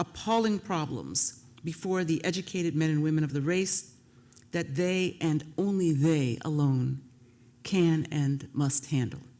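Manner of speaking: ordinary talk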